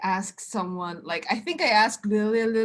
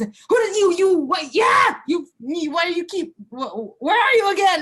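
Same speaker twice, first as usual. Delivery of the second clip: put-on high, angry, cranky old-tree voice, stumbling over words; 10 semitones higher, 8 dB louder than usual. Voicing a possessed character mid-ritual who yells at herself: different voice, like an angry old tree. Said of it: "it's like a different voice".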